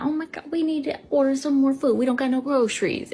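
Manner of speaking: high, fussing, complaining voice. Retelling what a son often says about food: imitating her son. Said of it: "My son say a lot".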